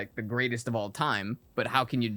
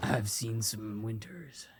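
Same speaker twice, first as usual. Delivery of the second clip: gruff, quiet, under-the-breath delivery; 6 dB quieter than usual. Describing how McCoy would really talk, the speaker demonstrates: gruff McCoy voice. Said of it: "He'd be a very gruff kind of".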